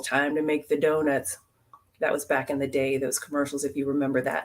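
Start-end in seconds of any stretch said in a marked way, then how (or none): 0.0-1.4 put-on mumbled speech. Recalling an old commercial where a guy heads into work, imitating his mumble. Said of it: "he would just mumble".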